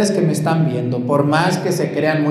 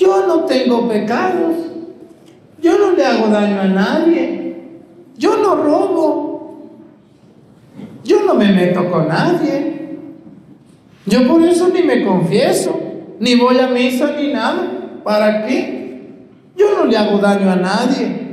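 very high, put-on little voice; 9 semitones higher than usual. Speaker imitates a certain kind of person for the audience: put-on little voice. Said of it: "Que hasta me sale la vocecita".

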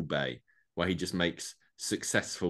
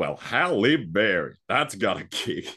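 raised, loud Southern accent in a detective voice; 2 semitones higher, 8 dB louder than usual. Asked to go first, a speaker does their Benoit Blanc voice. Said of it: "do our Benoit Blanc voice".

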